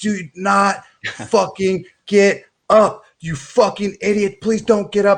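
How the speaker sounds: acted-out screaming, pitched very high. Retelling watching the fight live: imitating screaming at a fighter. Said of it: "I was screaming at, uh, Sterling to".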